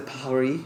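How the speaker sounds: bad, put-on French accent on the word "Paris". Saying PSG are bringing it back to Paris: bad French accent on 'Paris'. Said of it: "that's a bad French accent".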